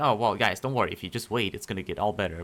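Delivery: condescending, smug, smartass know-it-all tone. Imitating how the advice might sound to sad people: mock smartass tone. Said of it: "Like a, like a smartass".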